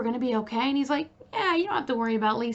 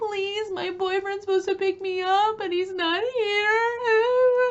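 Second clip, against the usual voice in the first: mock crying, pleading through tears, drawn-out sobbing; 7 semitones higher than usual. Speaker retells what a woman said when she would not move: imitating someone sobbing. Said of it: "Then she starts sobbing".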